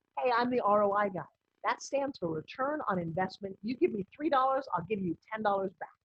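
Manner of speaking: plain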